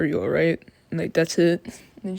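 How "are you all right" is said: play-acted chilly, detached, flat tone. Retelling how a character asks if someone is okay: imitating a cold tone. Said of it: "in, like, a cold tone".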